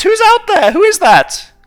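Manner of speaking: put-on very high, very loud, shrill old-lady voice. Storyteller voicing the person inside when a customer calls for pies, old granny voice. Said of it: "You recognise it as the first granny voice".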